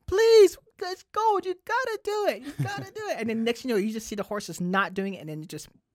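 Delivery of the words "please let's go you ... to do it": mock begging, very high and loud pleading. Retelling a film scene where Atreus urges the horse on: imitating Atreus pleading. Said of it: "and Atreus is like".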